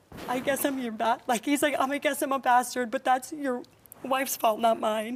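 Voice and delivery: emotional, choked voice. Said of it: "I don't know why it's making me so upset".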